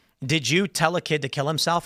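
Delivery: plain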